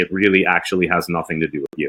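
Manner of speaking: usual speaking voice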